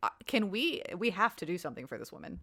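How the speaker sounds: ordinary delivery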